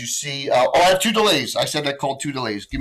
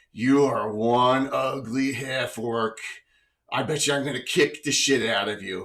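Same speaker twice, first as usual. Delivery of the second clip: low, deep voice with a taunting tone; 4 dB quieter than usual. Game master voices an unseen figure taunting Kazara, in a deep voice. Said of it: "you hear a, a, a deep voice say".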